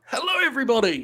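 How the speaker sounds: hyped-up, high, big-energy show-host voice. Showing the others how a greeting might sound: big energy greeting. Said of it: "big energy?".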